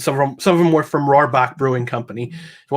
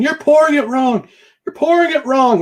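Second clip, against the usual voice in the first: mock, very high, shrill screaming; 13 semitones higher, 4 dB louder than usual. While pouring a drink, the speaker imagines bartenders yelling at their screens; imitating bartenders screaming. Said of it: "screaming at their screen right now".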